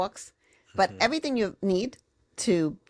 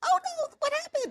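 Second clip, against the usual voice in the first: tensed-up, tight, very high, upset voice. Explaining how being upset changes the voice, tight, raised upset voice. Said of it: "Your vocal cords tighten. ... Like your voice goes up".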